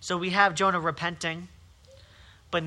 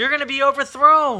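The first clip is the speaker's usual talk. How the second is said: loud, high-pitched scream. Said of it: "And he screams out".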